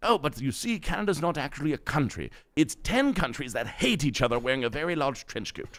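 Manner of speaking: put-on affected English accent. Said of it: "the accent I'm about to do".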